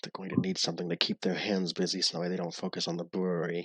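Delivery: muttering under his breath. Voicing a character muttering behind the group: muttering under his breath. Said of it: "kinda like mutters".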